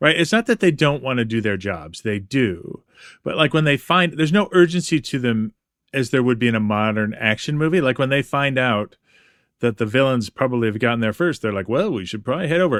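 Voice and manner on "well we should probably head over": mock cool, collected, unbothered offhand indifference. Speaker acts out the heroes learning the villains got there first: mock cool indifference. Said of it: "collected indifference to their work".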